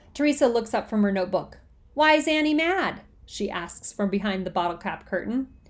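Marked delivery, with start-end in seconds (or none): none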